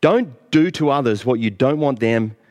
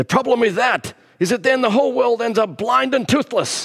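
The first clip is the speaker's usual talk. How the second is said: pitch way up, badly faked Russian accent; 10 semitones higher than usual. Speaking about the law, the speaker quotes Tevye from Fiddler on the Roof: Tevye in a bad accent. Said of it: "so that was a bad accent".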